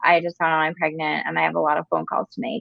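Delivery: acted, bone-dry, very low, flat deadpan. Retelling a sitcom line as a pregnant waitress: imitating a deadpan delivery. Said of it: "I just had to deliver it deadpan".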